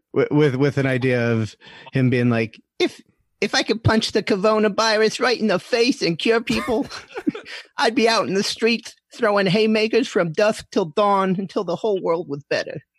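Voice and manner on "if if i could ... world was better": sloppy, rough-edged boxer voice, pitched very high. Doing a requested new impression of Mike Tyson: half-ass Mike Tyson impression. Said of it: "a half-ass Mike Tyson impression".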